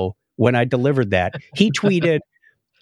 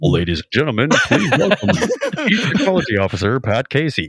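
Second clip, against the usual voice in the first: voice-of-god announcer voice. Demonstrating the impersonal way a speaker gets introduced, voice-of-god announcer. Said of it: "voice of god".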